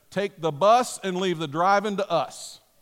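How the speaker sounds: stern, no-nonsense voice. Quoting what he always said when mom offered to help with driving: imitating a stern voice. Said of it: "stern voice".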